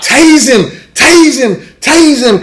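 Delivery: put-on very high, drawn-out shriek. Retelling sliding out from under a car, imitating own screaming. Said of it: "and I'm screaming".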